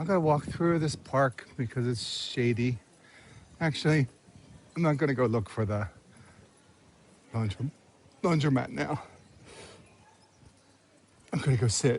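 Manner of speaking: talking with hiccups. Deciding to go sit down instead of looking for the laundromat, with hiccups. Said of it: "Sorry, hiccups".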